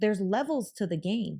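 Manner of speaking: ordinary delivery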